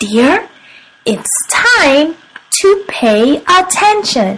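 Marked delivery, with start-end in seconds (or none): none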